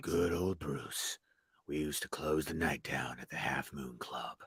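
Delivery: dropped way down, very low, soft, hushed deep voice. Trying a character's line after the other speaker fails at it: imitating a character's very low voice. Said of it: "he just goes really down here".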